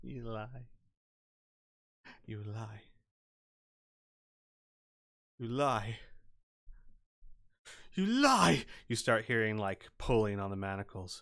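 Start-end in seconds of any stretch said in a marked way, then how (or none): 0.0-8.6 slow, drawn-out, insistent repetition. Narrator voicing a manacled prisoner as the listeners shut the door, very quiet. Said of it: "you hear very quietly".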